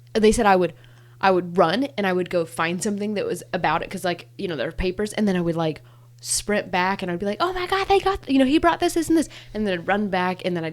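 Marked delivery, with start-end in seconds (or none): 7.4-9.3 acted out, very high, frantic, overexcited babble. Retelling running back on Christmas morning: retelling own excited rush. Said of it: "I was just losing my mind".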